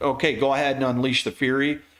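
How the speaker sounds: ordinary talk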